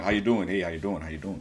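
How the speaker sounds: put-on deep, strong voice. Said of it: "Elvis got that real deep, strong".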